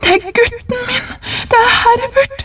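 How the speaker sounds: shouting while struggling. A mother struggles against a man holding her arm, crying out, struggling. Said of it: "ropte hun og kjempet for å komme løs".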